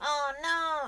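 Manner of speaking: goofy, high, silly, cartoonish put-on voice. Speaker repeats a reaction in the silly voice used to amuse someone. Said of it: "In that silly voice".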